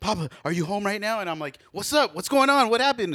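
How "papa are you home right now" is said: put-on desperate child voice, pleading. Retelling his son's call from the grandparents' house, imitating a desperate kid. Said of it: "he's like sounding desperate".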